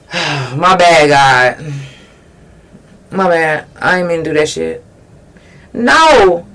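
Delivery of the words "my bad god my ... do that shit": low, offhand, careless tone. Mocking how people apologize to God: mock apology to God. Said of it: "So you just apologizing like".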